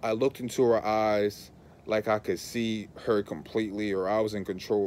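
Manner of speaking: ordinary talk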